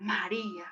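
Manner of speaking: soft, tender, loving, affectionate tone. Imagining how the Lord would call her name: tender, loving 'María'. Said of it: "así de tierno y amorosamente".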